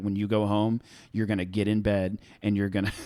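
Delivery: put-on furious tone. Retelling mom's reaction to skipping tutoring: imitating furious mom. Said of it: "she was so furious".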